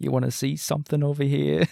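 soft, creaky character voice. Imitating an actor's character in a show: Christopher Walken impression. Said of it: "little Christopher Walken impression".

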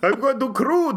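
put-on vampire-style Romanian accent. Teasing the other speaker's vampire persona, mocking romanian vampire accent. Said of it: "Don't make fun of my accent. This is a proud Romanian accent".

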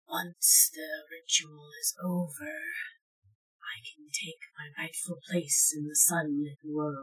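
very quiet, soft whispered voice. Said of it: "you all hear, like, whispers".

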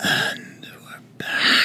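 extra sexy, breathy whisper. Asked on the show for an extra sexy one, saying the return line in an extra sexy voice. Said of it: "can you give us an extra sexy one".

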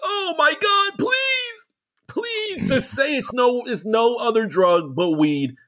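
acted crying, pleading. Retelling a scene, acting out a character's plea, imitating someone sobbing, begging. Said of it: "Gia is literally just sobbing".

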